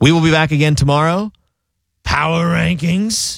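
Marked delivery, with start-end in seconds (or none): 2.0-3.4 small, little demonic voice. Sports show host announcing the next segment, little demon voice. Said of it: "Little demon voice warming up there".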